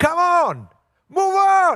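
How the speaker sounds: impatient, stretched-out yelling. Retelling how an impatient man waiting in line yelled; imitating someone yelling. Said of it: "So he started yelling".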